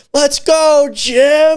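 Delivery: very high, super loud hype yell. Retelling what gets shouted from the dugout as the series starts: imitating Bennett's loud yell. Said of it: "super loud".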